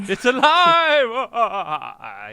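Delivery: very loud, very slow, booming, swooping evil laugh. Redoing a joke line with a cackle after explaining it: villain voice with evil laugh. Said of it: "a bad guy laugh".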